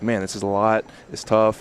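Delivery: ordinary talk, nothing marked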